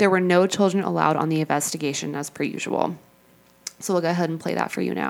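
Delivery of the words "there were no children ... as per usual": plain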